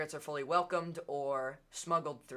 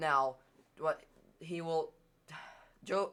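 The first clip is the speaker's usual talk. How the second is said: stuttering, stumbling start, tripping over words. A speaker giving a talk catches himself mid-sentence, stuttering. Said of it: "sorry for I'm stuttering".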